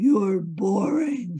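loud, booming, doom-laden voice. Imitating the inner critic Nigel: booming voice of doom. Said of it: "sort of a booming voice of doom".

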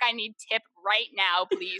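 put-on crying voice. Retelling sitting in the hallway after new admits: retelling own crying. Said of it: "crying by myself".

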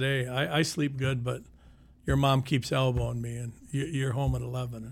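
ordinary talk

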